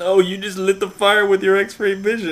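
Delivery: shrieking scream, very high and very loud. Telling a story where a man screams at the woman who came to save him, retelling a scream. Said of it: "there's a guy screaming".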